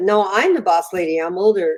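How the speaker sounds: ordinary delivery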